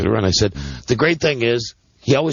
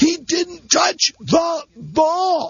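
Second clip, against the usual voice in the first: put-on very high, very slow screaming, last word stretched. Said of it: "starts screaming at the refs".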